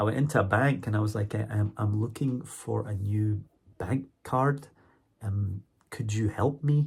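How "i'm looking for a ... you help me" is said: deliberately very slow, over-careful, drawn-out speech. Retelling his request at a bank in Scotland: speaking very slowly. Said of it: "Why are you talking so slow?".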